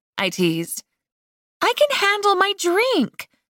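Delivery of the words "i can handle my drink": very high, slow, objecting, protesting voice. After being teased about her drinking, [name] protests. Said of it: "[name] protested".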